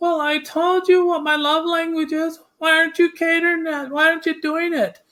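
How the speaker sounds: very high, whiny little put-on voice. Acting out someone complaining about their love language: imitating a whiny voice. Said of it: "just have that little whiny voice".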